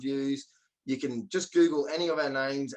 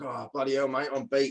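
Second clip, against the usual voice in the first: put-on true blue Aussie tradesman voice. Retelling a listing appointment, imitating a true blue aussie tradesman. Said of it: "this bloke was like a true blue Aussie".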